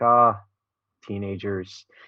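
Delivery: fond, longing, wistful and nostalgic tone. Showing how someone else could say it, nostalgic tone. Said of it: "with a nostalgic tone".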